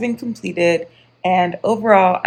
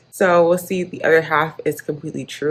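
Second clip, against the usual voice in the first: ordinary delivery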